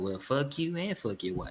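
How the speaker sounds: very soft, muttered under the breath.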